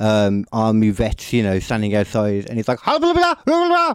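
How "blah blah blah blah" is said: very high, loud fake German gibberish. Retelling what he said after crashing the car, in fake German accent gibberish. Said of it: "I tried to do the German accent and the German language".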